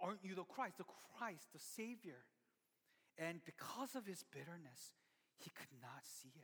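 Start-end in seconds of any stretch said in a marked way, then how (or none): none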